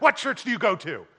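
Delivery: imitated combative, confrontational tone. Retelling a man questioning him about church; imitating a combative tone. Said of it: "had this tone in his voice that seemed like he wanted to pick a fight".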